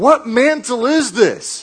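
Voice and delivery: very high, very slow, drawn-out loud holler. Retelling how a man hollered after the speaker: retelling a holler. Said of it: "he hollers after me and goes".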